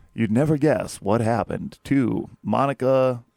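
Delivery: put-on calm, soothing true-crime narrator voice. Describing the voice heard every night at bedtime, imitating a soothing true-crime narrator. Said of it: "The Voice is always soothing".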